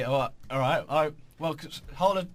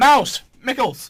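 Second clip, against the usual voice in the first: very high, loud cartoon shout. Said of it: "Sounds like Disney just shouted".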